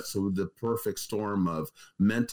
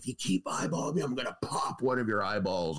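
menacing, in-your-face yell, held back and mild; 3 semitones higher than usual. Retelling what a man in jail screamed at a kid, acting out screaming in his face. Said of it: "just screaming in his face".

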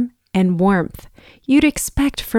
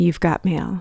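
flat, lifeless, low machine-like computer voice; 5 semitones lower, 6 dB quieter than usual. Recalling the email alert everyone waits for, in a lifeless voice. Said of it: "as soon as you hear the lifeless voice".

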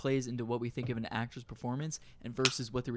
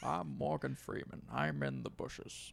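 froggy put-on voice, quieter; 2 semitones higher, 5 dB quieter than usual. Doing an impression on request after a countdown: froggy Morgan Freeman impression. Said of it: "Morgan Freeman impression right now".

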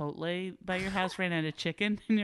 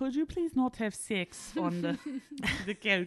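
bad, pitched-up, put-on French accent; 5 semitones higher than usual. Speaker imagines what people would say to them, in a put-on French accent. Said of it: "That's my French accent".

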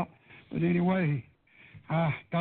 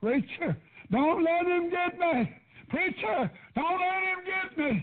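mock, very high-pitched, piercing hollering; 13 semitones higher than usual. The preacher retells how Marvin, tied to a bed, called out: imitating Marvin hollering. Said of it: "he started hollering".

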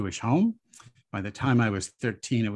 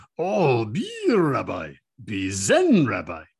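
very slow, swooping, put-on Japanese accent; 5 dB louder than usual. Retelling what a Japanese teacher replied: imitating Roshi's Japanese accent. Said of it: "sounded something like this".

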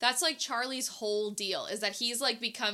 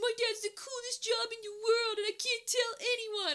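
put-on very high-pitched, aggrieved, upset kid voice; 12 semitones higher than usual. Recapping the end of a Santa movie, quoting Charlie: Charlie impression. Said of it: "That's a great impression".

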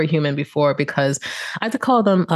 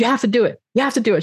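put-on, high, almost yelling, pressing hard, insistent; 7 semitones higher than usual. Retelling being pushed at five years old: imitating someone almost yelling. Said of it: "almost like yelling at me".

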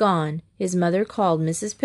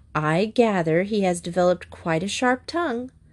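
ordinary delivery, nothing marked

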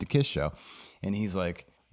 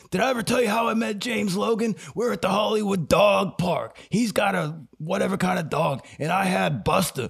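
put-on pitched-up stoner dude voice; 10 semitones higher than usual. Retelling what a man at the dog park told his friend, in a stoner-man voice. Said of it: "I'm using my Stone Man voice".

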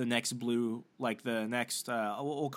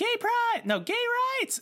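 sudden, very high, shrill, swooping scream; 6 dB louder than usual. Telling how she sipped a double shot and randomly burst out, act it out, imitating someone screaming. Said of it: "just randomly screams".

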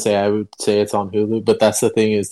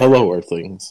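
put-on demanding voice, lower pitch; 2 semitones lower than usual. Explaining that Nibbler talks, imitating Nibbler's demanding voice. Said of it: "he has a very demanding voice like this".

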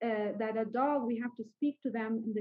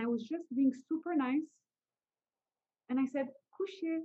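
ordinary talk

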